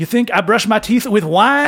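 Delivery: loud, high mock French accent. Retelling a man's lines in a crowded elevator, offensive french accent. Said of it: "I'm going to do an incredibly offensive French accent".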